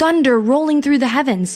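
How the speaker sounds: ordinary delivery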